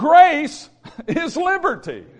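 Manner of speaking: loud, high-pitched preacher-style shout. Speaker announces he will shout the phrase one more time: shouted loudly. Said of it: "let me shout it one more time".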